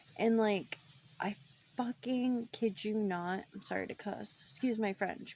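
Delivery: plain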